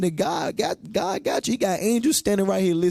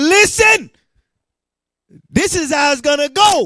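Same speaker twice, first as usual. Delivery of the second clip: very loud, high, booming delivery; 9 semitones higher, 9 dB louder than usual. Acting out Mattathias answering the king: imitating Mattathias speaking loudly. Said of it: "He spoke with a loud voice".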